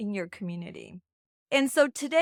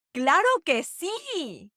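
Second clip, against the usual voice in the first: animated, high, excited and emphatic, with sí drawn out; 6 semitones higher, 4 dB louder than usual. Demonstrating a Spanish phrase for learners, excited and emphatic. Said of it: "saying it in a very exciting way".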